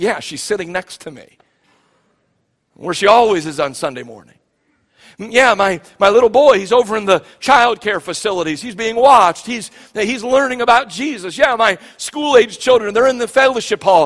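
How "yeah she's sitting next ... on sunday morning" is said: put-on, thoroughly sarcastic delivery. Addressing the congregation, voicing what sarcastic listeners might say: mock-sarcastic reply. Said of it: "some of you can get all sarcastic with me and say".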